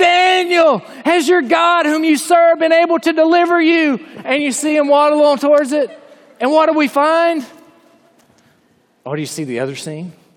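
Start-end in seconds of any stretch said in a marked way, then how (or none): 0.0-4.0 high, anguished screaming cry. Retelling the story of the king calling out to the old man, imitating an anguished scream. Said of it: "You can hear the anguish in his voice".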